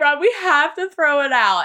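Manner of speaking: high, weepy, mock tearful crying voice. Recalling a night worrying about the Christmas tree, retelling crying. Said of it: "And so I'm like crying".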